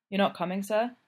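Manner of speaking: plain reading voice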